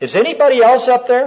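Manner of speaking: desperate, high, loud, fast blurted plea.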